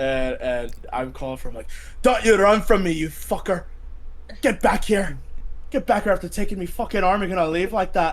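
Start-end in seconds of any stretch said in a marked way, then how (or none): 2.0-8.1 put-on high, strong South London accent, called out. Shouting after someone who took his arm, in Mad Dog's great South London accent. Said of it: "a very great South London accent".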